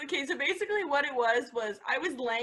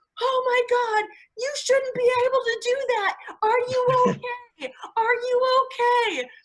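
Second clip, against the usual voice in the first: very high, loud, shrill horrified scream; 12 semitones higher, 8 dB louder than usual. Retelling his horrified reaction to her folding in half, imitating someone screaming. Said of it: "he's just screaming".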